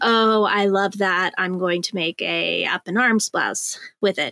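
usual speaking voice

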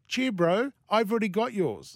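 put-on New Zealand accent. Retelling what a woman said about a present: New Zealand accent. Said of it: "That's my New Zealand accent impersonation".

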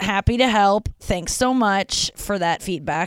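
slow, sarcastic-sounding delivery. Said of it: "I'm sounding, like, very sarcastic".

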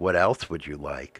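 soft, hushed voice, close to the ear. Retelling what she half-whispered in his ear during a massage: imitating a half-whisper. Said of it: "she comes and whispers into your ear".

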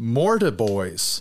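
"mortiboys" said slowly, with a falling tune.

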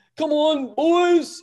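put-on English accent, very high, shouted yell. Retelling how someone yelled out during the match: imitating Keegan's English accent yell. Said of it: "Keegan yelling out things from, in his English accent".

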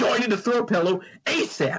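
mock screaming, toned down, high-pitched half-yell. Imitating Martha Stewart in prison yelling at the guards: imitating Martha Stewart screaming. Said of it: "screaming at the guards".

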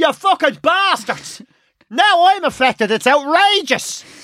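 indignant, furious outburst. Retelling his own reaction to a blocked motorway: imitating his own outraged rant. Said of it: "you see I'm being that Irish prick".

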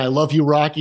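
ordinary delivery

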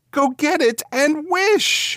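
very high, drawn-out cry, quivering with excitement. Narrator reads the old man's wife calling to him; crying out, quivering with excitement. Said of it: "cried his wife, quivering with excitement".

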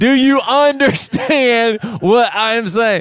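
overly loud, very slow talk. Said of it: "speaks a different language".

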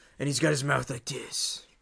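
put-on gravelly hero voice. Asking which of his films the other person saw, in a Batman voice. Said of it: "where he talks like this".

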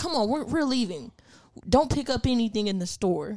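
irate, pissed-off, hurried tone. Retelling a customer leaving after being told to wear a mask: imitating an angry customer. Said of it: "she just got all pissed and was like".

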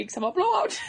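put-on Swedish accent. Showing how a Swedish accent gets attempted: Swedish accent from Frozen. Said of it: "Whenever I try to do a Swedish accent".

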